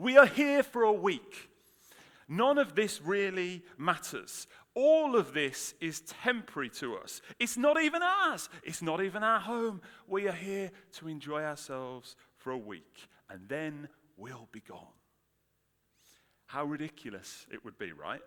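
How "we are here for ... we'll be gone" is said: very loud, swooping, fed-up exasperated shout. Describing someone who has had it with the remodeling, acting out a shout. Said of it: "shout at the top of your voice".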